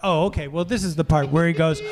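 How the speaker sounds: ordinary delivery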